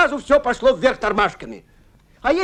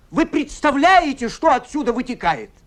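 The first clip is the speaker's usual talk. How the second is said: normal talking voice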